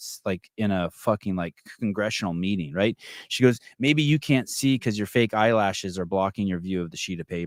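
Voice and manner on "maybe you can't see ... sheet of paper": ordinary talk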